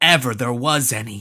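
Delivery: ordinary delivery, nothing marked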